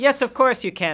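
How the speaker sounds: very high, grandly gracious, generous, magnanimous-sounding voice. Imitating a producing partner who grants an emailed request: imitating Shonda, very magnanimous. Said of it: "in a very magnanimous way".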